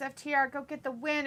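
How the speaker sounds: ordinary delivery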